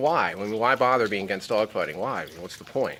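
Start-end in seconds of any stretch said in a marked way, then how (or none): none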